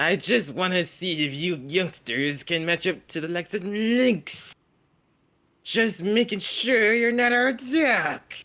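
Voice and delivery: put-on pirate captain voice, one word drawn out. Role-playing a pirate addressing the youngsters, in a pirate voice. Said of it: "How's my pirate voice?".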